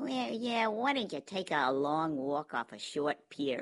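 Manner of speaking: whiny, cartoonish character voice. Discussing a show's characters, quoting her in a whiny cartoonish Phyllis voice. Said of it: "Whiny and a bit cartoonish".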